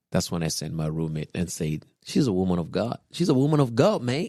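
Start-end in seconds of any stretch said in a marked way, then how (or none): 2.0-4.3 put-on Australian accent, pitched up. Retelling a roommate's words about a woman, roommate's australian accent. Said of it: "Was that your Australian accent?".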